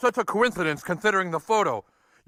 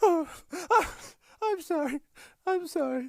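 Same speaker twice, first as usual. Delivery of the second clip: tearful speech, crying while talking; 10 semitones higher, 5 dB quieter than usual. A character apologizes while another begs them to stop crying: crying while talking. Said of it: "Just stop crying".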